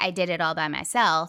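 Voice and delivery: plain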